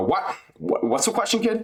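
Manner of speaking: very high put-on voice, swooping and swinging around.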